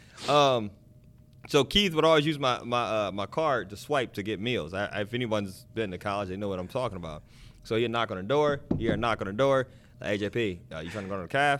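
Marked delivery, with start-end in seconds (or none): 10.1-11.6 deep, lowered voice. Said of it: "this is my Keith voice also".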